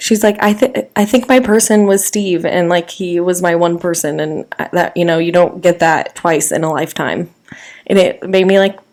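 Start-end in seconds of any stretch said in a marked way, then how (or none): none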